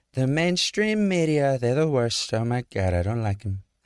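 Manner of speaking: offhand, improvised, tossed-off aside. Showing how he slips a little improv into reading off a teleprompter, do a Trump impression. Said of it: "he'll do like a little improv".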